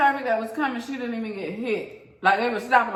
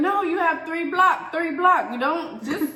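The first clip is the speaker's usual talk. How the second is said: put-on Arabic accent with choppy, broken English; 6 semitones higher than usual.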